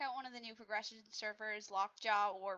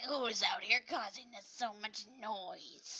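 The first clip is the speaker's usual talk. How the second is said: put-on cranky, complaining, grumpy elderly woman voice. Acting out a woman complaining about noise, imitating a grumpy old lady. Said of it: "she acts like a grumpy old lady".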